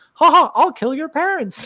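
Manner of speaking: squeaky cartoon mouse voice. Retelling how an Imagineer said something awful on request, Mickey Mouse voice. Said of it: "in a Mickey Mouse voice".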